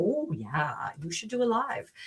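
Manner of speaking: put-on easy, relaxed Canadian accent. Retelling Becky's reply about doing a live: imitating Becky, Canadian-sounding. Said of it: "she sounded Canadian".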